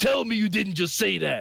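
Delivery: acted announcer delivery. Retrying the impression after being told to add a catchphrase: Booker T impression. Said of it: "that's better".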